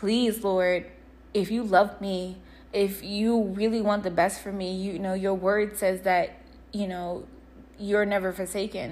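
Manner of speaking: plain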